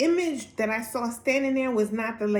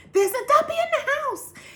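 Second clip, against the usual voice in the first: acted scream, higher and louder; 4 dB louder than usual. Retelling running to her mom after a shower scare: imitating her own scream. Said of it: "And I'm screaming".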